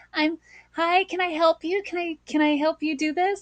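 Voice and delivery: forced, pushed-up, very high voice. Retelling offering help at Costco while learning to shift voice, very high-pitched voice. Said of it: "it was very high pitch".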